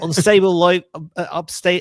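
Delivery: bad Australian accent. Quoting a computer's announcement about an unstable flight path, attempted australian accent. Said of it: "I can't do an Australian accent".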